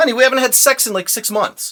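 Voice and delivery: very high, loud, self-justifying defensive protest. Retelling how the brother defended himself: imitating a defensive husband. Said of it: "he was trying to defend himself".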